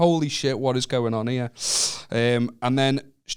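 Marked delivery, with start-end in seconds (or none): none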